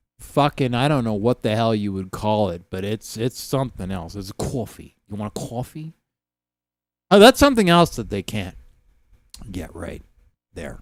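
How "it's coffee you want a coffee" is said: soft, put-on central New York accent. Describing how people there talk, the speaker offers coffee in a put-on central New York accent. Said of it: "the central New York accent".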